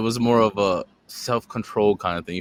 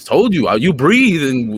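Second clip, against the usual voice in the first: loud, high, slow, aggressive insistence, leaning hard. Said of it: "Why you so aggressive?".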